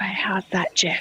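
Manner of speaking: speaking in a whisper. Checking the sound after promising to talk quieter: whispering. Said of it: "I'll whisper".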